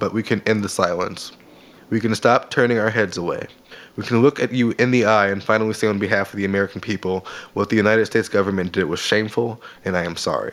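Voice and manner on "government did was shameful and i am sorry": normal talking voice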